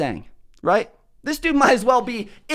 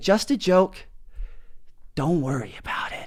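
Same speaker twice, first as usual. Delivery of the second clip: lowered tone, lower and quieter; 5 semitones lower, 7 dB quieter than usual. Retelling what was said to a stranger about a joke: lowered tone.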